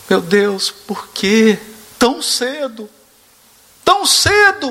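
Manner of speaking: play-acted tearful, high, slow wailing sob. Retelling a man's words at his brother's wake; imitating someone crying. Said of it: "Chorando muito".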